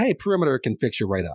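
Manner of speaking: usual speaking voice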